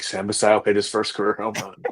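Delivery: mock under-breath whisper. Retelling waiting with a dead phone, imitating whispering under breath. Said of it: "whisper to myself under my breath".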